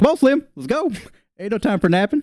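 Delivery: little, very high-pitched halfling voice. Voicing a halfling tugging a player's shirt to flee: voicing the halfling. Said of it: "He's like".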